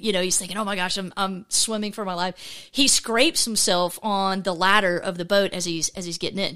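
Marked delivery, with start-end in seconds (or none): none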